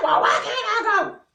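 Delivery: very high, loud, defiant yell. Retelling talking back to mama: imitating own past yell. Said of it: "This me yelling".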